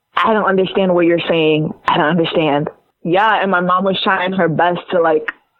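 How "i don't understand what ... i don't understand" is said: normal talking voice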